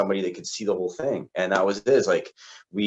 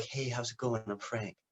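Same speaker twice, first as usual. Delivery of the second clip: very quiet, soft, calm, easygoing tone; 3 semitones higher, 13 dB quieter than usual. Recalling first meeting an instructor who came out of the back, imitating Frank's calm voice. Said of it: "really calm, really chill guy".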